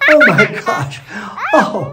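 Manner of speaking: slow words through giggles, high and swooping. Opening a travel video, laughing while talking. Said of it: "Why am I laughing so much?".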